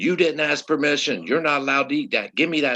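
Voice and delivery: loud screamed, scolding yell. Retelling how a teacher took a girl's sucker: imitating a teacher yelling. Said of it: "comes over yelling and screaming at her".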